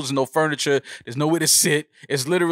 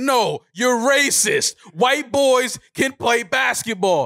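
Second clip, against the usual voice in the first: mock very drawn-out, slow, pitched-up, indignant drunk voice; 8 semitones higher than usual. Retelling a basketball stats argument in a bar, imitating Peeje's angry outburst. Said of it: "he lets me have it in the fucking bar".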